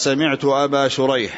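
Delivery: ordinary talk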